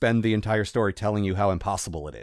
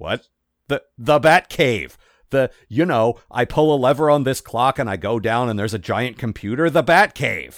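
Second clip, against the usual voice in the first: dry, sarcastic, matter-of-fact, spelled-out delivery; 3 semitones higher, 6 dB louder than usual. Retelling a scene where a man asks Alfred about the Batcave, imitating a sarcastic tone. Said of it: "he's got this excellent sarcastic tone".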